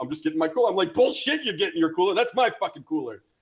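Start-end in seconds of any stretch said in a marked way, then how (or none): 0.9-3.2 put-on sudden, furious, heated angry outburst. Recounting suddenly yelling at a guy mid-conversation, retelling an angry yell. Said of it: "I'm just like yelling at this guy".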